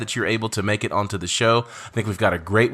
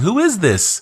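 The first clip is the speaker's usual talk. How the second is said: put-on laughing speech, higher and louder; 9 semitones higher, 5 dB louder than usual. Retelling being taken down by someone who laughed: imitating someone laughing while talking. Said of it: "the whole time he was laughing, going".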